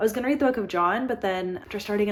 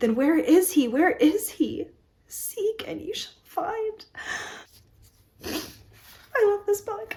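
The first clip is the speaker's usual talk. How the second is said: tearful, crying, very high-pitched voice; 10 semitones higher than usual. Reading a passage aloud from a book they love, crying. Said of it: "I'm crying a lot".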